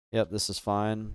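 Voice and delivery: ordinary talk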